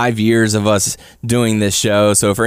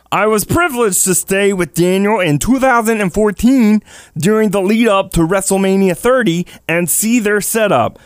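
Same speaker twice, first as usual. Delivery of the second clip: silly, wacky, made-up, very high voice; 10 semitones higher than usual. Reading aloud Ben's statement, in a crazy, wacky voice. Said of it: "in just some crazy, wacky voice".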